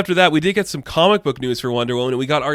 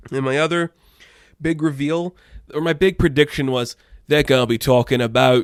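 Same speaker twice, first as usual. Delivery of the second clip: British accent slipping in, suddenly put on. Talking through Sweet Tooth predictions, the speaker slips into a put-on accent. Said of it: "I don't know why I did that accent".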